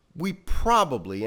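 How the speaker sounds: stress on "probably", pitch lifted and word stretched.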